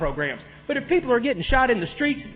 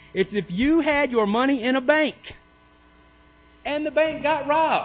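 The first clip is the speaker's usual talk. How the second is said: very slow, deliberate, pitched-up, simple step-by-step delivery; 5 semitones higher than usual. Explaining the unfunded pension to the listener, real slow and simple. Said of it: "I'll make it real slow and real simple".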